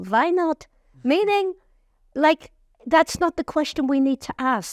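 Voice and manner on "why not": fake Yiddish-accented speech. Retelling God's answer to why me, in a Yiddish accent. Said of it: "he says in a Yiddish accent".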